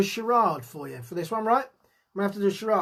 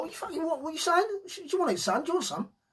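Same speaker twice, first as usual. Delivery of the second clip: put-on drunk, aggressive tough-guy voice, higher and quieter; 8 semitones higher, 5 dB quieter than usual. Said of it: "And you're like".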